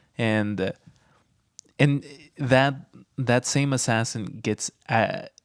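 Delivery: ordinary delivery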